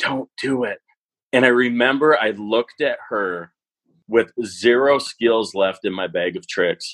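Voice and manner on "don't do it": quiet, soft, hushed stage half-whisper. Retelling a high school student in the front row warning: imitating a half-whisper. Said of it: "she whispers".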